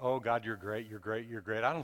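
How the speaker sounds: going through the motions. Describing empty worship, the speaker shows praising god just going through the motions. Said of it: "just going through the motions".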